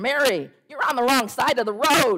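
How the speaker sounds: loud, high-pitched roaring. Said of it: "she roared".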